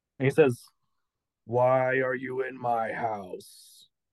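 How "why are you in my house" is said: very drawn-out, very slow, eerie ghost voice. Voicing a fading, see-through ghost in the story, in a ghost voice. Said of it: "Why do you sound like the ghost from Insidious 3".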